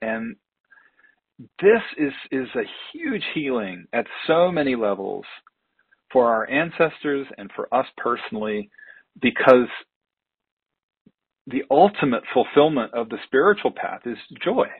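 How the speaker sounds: choked-up voice catching with emotion. A speaker addressing listeners, getting choked up, choked up. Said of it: "it gets me choked up".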